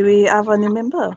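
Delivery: put-on speaking gently, French accent. In a role-play, a passing fellow speaks to a pair at the bar: soft french accent. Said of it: "He says softly in French, like a French accent".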